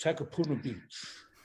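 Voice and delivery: very fruity voice, laid on thick. Recalling a stage performance seen as a schoolkid, in a fruity Bruce Mason voice. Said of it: "Bruce had this very kind of fruity voice like this".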